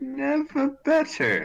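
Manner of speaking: put-on very high, sing-song, swooping British accent. Playing q in a role-play, answering another character's question in a british accent. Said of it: "Why are you British".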